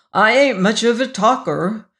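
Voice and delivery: almost sheepish, a little bashful. Abe Frumkin, asked to say a word at the funeral, replies almost sheepish. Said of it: "he said almost sheepishly".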